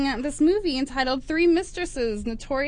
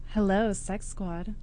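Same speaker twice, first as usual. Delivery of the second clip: put-on sultry, seductive, sexy voice; 6 semitones lower, 4 dB quieter than usual. Show host greeting the audience after a caller, in a put-on sexy voice. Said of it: "You like you like my sexy voice?".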